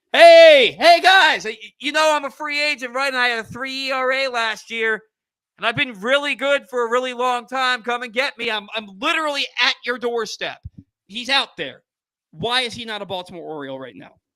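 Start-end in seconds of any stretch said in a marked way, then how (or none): 0.1-10.6 loud, raised holler as through a bullhorn. Imagining David Robertson outside the stadium with a bullhorn: David Robertson shouting through a bullhorn. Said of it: "with a bullhorn".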